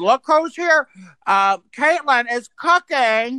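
slow, drawn-out put-on celebrity voice. Retelling what she said when someone came in: Caitlyn Jenner voice. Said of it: "doing the Caitlyn Jenner voice".

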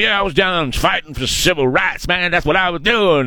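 put-on accent, folksy and boasting. Retelling how Joe Biden talks to a truckers union: imitating Joe Biden.

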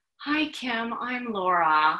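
play-acted composed, calm, cool and soothing voice. Retelling how a caller greeted the crying speaker: retelling a calm, cool voice. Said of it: "in this calm, cool voice".

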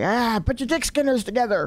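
gruff TV host voice. Retelling how people mock the host: mocking imitation of the gruff host. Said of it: "are mocking him".

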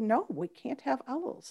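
very quiet, stoic, unbothered voice. Retelling how Elaine Miles refused the owls: imitating Elaine Miles, very quiet. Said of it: "just very quietly".

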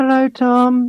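high hypnotist lady voice. Showing how the lady on a regression documentary talks: hypnotist lady impression. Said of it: "here's my impression".

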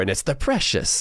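bad, creepy put-on creature voice. Describing people fixated on rehabilitating their score, terrible Gollum voice. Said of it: "that was a terrible Gollum voice".

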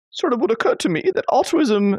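put-on posh British accent, very high, queenly. Quoting the other speaker's point, in a failed imitation of their accent. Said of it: "I was trying to do your accent".

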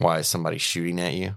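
mock muttering under breath. Retelling a coworker's remark to a nervous colleague: imitating someone muttering under breath. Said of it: "I heard him say under his breath".

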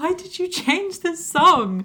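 very high voice, on the verge of tears. Act out Zac Efron running into Sharpay's dressing room, imitating him about to burst into tears. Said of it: "he sounds like he's legitimately about to burst into tears".

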